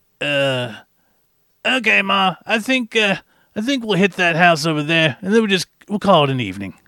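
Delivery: put-on middle-aged New Yorker voice. Retelling what a costumed kid said while walking by, 50-year-old New Yorker voice. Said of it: "He sounded like a 50-year-old New Yorker".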